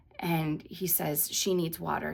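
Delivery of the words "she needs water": ordinary talk, nothing marked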